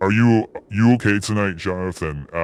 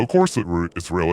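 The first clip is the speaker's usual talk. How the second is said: ordinary talk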